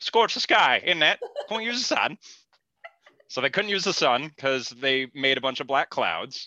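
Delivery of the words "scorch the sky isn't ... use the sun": put-on, very high-pitched British accent. Repeating the other speaker's line back at them in a put-on british accent. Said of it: "it came Up British".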